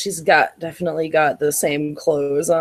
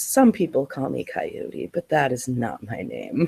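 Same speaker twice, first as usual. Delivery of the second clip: soft, hushed half-whisper under the breath; 4 semitones lower, 5 dB quieter than usual. Voicing a character who looks around before speaking: half-whispering. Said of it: "he looks around and he whispers".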